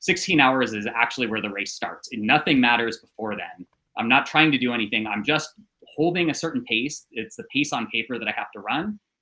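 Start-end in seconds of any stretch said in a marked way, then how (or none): none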